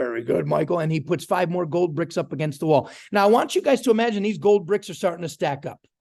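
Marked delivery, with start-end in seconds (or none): 0.0-0.8 low, full, deep baritone with approving tone. Retelling calling Brian after showing the plan to five people: Brian's deep baritone voice. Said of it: "In his deep baritone voice".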